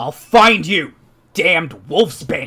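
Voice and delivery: very loud, booming bellow. Narrating a game, the speaker voices Harkon in the wrong tunnel, bellowing. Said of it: "you all eventually hear him kind of bellow".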